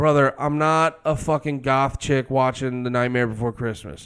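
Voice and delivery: normal talking voice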